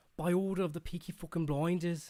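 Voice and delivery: very loud, high Brummie gangster accent. Asked to do the accent again, the speaker delivers a Peaky Blinders accent. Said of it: "can you do that accent again".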